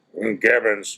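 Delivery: rough, gruff tone. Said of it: "he always answers the phone like in his gruff voice".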